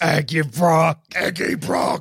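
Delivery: put-on monster voice. Goofing around with friends, asked to say it in the Venom voice. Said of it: "Do it in the Venom voice".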